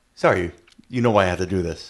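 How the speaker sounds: mock overly polite, courteous, mannerly delivery. Retelling a film scene where Hangman collects the weapons: imitating Hangman speaking very politely. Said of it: "he's saying almost, like, very politely".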